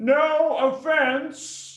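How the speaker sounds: very high, shrill, all-out yell. Saying the line again after being asked to yell it: yelling. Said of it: "Give me one more".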